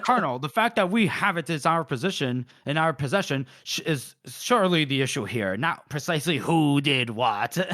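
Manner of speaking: angry, irritated, cross tone. Retelling a scene where Paul gets pissed at the colonel: imitating angry Paul. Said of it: "Paul gets pissed".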